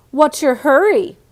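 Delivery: mean, sneering bully tone. Reading a story aloud, voicing Marty blocking Heidi's way in a nasty voice. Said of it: "he asked in a nasty voice".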